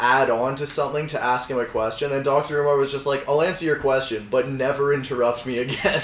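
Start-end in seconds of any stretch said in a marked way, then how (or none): none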